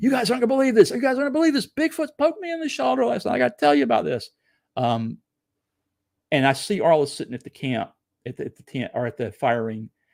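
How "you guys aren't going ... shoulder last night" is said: very high shrieking, rattled off. Telling a camping story, re-enacting coming out of the tent, retelling a scream. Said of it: "I'm like probably screaming".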